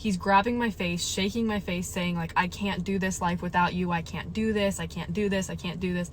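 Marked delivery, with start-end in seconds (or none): 2.4-6.1 mock hysterical sobbing, bawling. Recounting how the partner came over a month before their wedding, imitating hysterical sobbing. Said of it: "just sobbing hysterically".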